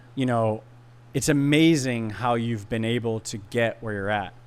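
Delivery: ordinary delivery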